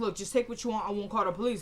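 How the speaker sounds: ordinary talk, nothing marked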